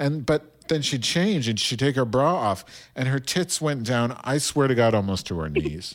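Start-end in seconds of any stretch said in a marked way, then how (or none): none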